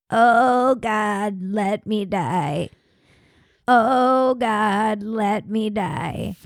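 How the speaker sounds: put-on very slow, drawn-out pleading old lady voice. Retelling what an old lady next door kept saying: imitating an old lady pleading to die. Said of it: "she would be like, all day and all night".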